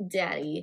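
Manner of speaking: put-on soft childlike voice. Retelling a movie scene where she says goodbye to Charlie: soft childlike voice. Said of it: "in a very soft and, like, childlike way".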